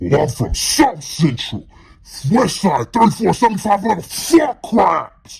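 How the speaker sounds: put-on loud, fast, rising, rattled-off, intimidating anger. Retelling a man who got angry on hearing they're from Minnesota: retelling an angry threat. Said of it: "Angry, like intimidating".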